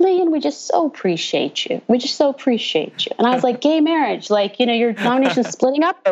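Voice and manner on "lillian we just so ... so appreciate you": laid-on put-on Southern accent, swooping and sing-song. Quoting members of a church denomination thanking the speaker, in a Southern accent. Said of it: "saying in the Southern accent".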